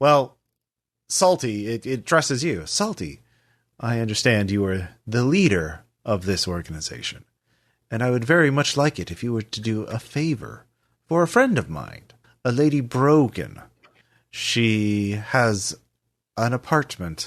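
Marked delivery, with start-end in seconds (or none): 2.7-13.6 even, calm, courteous voice, quick pace. Reading out a message that addresses salty, the speaker uses a calm voice. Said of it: "so you all hear the same calm voice".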